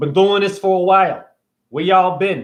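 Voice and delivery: put-on New Jersey accent. Switching into a different voice mid-talk: put-on jersey accent. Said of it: "I'm gonna use my Jersey voice over here".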